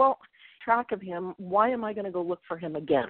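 normal talking voice

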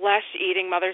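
ordinary talk

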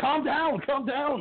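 frantic, hurried soothing tone.

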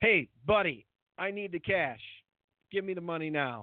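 put-on, mock-pushy, demanding tone. Retelling how the listener came at him for cash, imitating a pushy demand. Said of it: "But you came at me and".

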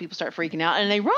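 ordinary delivery

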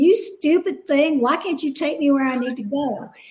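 cross, angry cursing and scolding. Telling about a friend whose GPS went the wrong way, imitating her cursing at it. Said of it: "she started cursing at the GPS".

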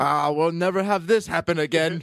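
put-on scolding restaurant manager voice. Acting out a restaurant manager who came out finger wagging: scolding restaurant manager. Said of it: "he came out, finger wagging".

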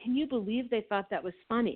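ordinary delivery

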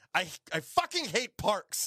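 high put-on yell. Retelling what a woman yelled, imitating a woman yelling. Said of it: "is what she yells".

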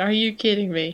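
mock screaming. Speaker recalls watching LeBron's play, retelling a scream. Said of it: "screaming, like".

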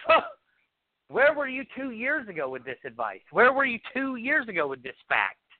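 put-on exasperated, despairing outburst, frustrated and pitched high. Quoting a man's exact words to the speaker, retelling his frustration. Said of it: "the frustration in his voice".

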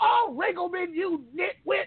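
very high, drawn-out, fed-up angry scream. Retelling how grandma reacted to a blown game: imitating grandma screaming angrily. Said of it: "she'd be so pissed in her room, screaming".

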